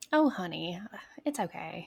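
sweet put-on Southern belle accent. Demonstrating her customer service voice for people angry at her, sweet Southern belle voice. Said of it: "It gets very Southern slash Southern Belle".

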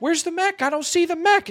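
put-on very high-pitched child voice. Retelling being attacked by a mech, imitating young Jake. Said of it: "his voice is like kind of high-pitched".

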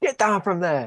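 mock, mild, token shout in a drunk voice. Speaker retelling a drunk man shouting at them in an alley, retelling a drunk man's shout. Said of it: "He's literally just shouting at us like".

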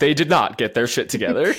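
documentary-style storyteller narration voice. Speaker tells a story about ag, then comments in narrator voice. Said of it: "Narrator voice".

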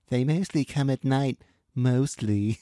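put-on spoiled, bratty cartoon kid voice. Trying not to laugh about a film clip, quoting it: Cartman voice. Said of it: "all I can think of is now Cartman going".

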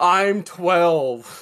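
put-on distressed little outcry, high-pitched yelp. Recalling another player lying blinded on the floor: imitating someone screaming. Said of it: "laying on the floor screaming".

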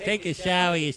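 very high-pitched gangsta-style voice. Repeating the line after being told it turned gangsta: Katt Williams impression. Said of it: "That has turned into gangsta".

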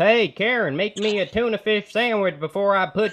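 put-on Tennessee accent. Describing his father's tennessee roots, the speaker mimics how locals talk: tennessee accent impression. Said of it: "like this?".

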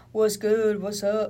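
slow, street-tough voice with slang. Imitating how a guy talks, like he's in a gang: imitating gang-style talk. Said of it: "He talks like that".

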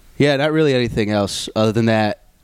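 ordinary delivery

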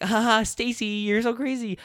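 put-on very high, giggling teen-girl voice. Retelling how two teenage girls from school laughed about it: imitating giggling teenage girls. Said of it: "They were like giggling and laughing like".

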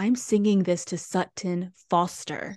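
plain

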